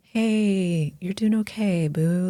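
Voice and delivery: gentle, soft, slow soothing tone with "hey" drawn out. Showing how they talk someone down from a panic attack, soft soothing tone. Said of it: "Like speak in a softer tone".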